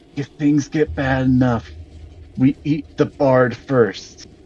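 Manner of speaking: whispering in a joking way. Voicing a character leaning in so only Mercis can hear: whispering jokingly. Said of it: "he's gonna lean in and whisper so only Mercis can hear".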